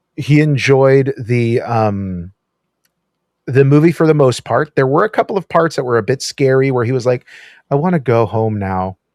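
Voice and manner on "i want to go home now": mock mournful, sad, plaintive tone. Retelling what he said during a scary part of a movie: imitating a sad tone. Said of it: "in that sad tone".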